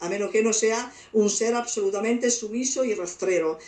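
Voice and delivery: ordinary talk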